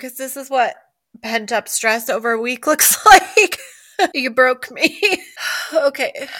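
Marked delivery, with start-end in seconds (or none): 0.0-5.0 crying with helpless laughter, laughing through tears. Answering the other speaker, who asked if she needs a tissue, laughing to tears. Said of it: "I am".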